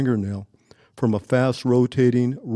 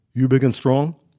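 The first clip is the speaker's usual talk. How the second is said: put-on heavy Russian accent. Speaker retells a man questioning him, heavy Russian accent. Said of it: "a heavy Russian accent".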